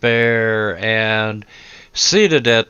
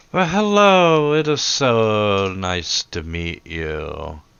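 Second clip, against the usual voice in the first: gushing sing-song delivery with a drawn-out "so". Voicing one of the three brides greeting the guests: bride character greeting guests. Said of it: "one of 'em's like".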